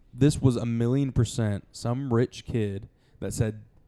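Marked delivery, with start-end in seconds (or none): none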